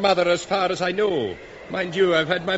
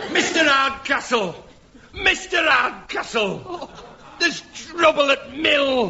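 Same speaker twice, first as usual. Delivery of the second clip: put-on Yorkshire accent, pitched up, with laughter; 7 semitones higher than usual. Calling out for Mister Hardcastle in a play: Yorkshire accent.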